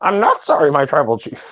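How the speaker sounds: high, swooping, animated put-on voice. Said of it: "I was doing my best Paul Heyman".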